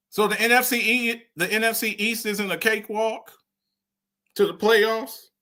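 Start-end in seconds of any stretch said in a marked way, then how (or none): 1.4-5.3 very sarcastic, sarcasm-laden delivery. Asking whether a division is an easy road to the playoffs: sarcastic. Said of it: "I'm being sarcastic".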